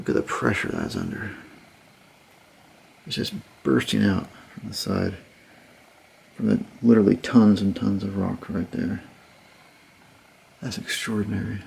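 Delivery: speaking low. Someone exploring a timbered tunnel section, in a lowered voice. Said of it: "I'm going to lower my voice a bit".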